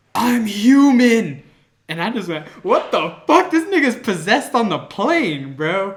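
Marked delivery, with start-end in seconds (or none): 0.2-1.5 very loud, shrill, high, stretched-out scream. Retelling what a man on a plane suddenly screamed, imitating his scream. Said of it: "gets all straight and just screams".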